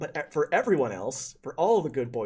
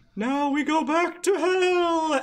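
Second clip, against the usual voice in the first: very high, loud ghost voice, long oh; 5 dB louder than usual. Voicing ancestors being sucked back to hell: ancestor ghost voice. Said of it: "and then go".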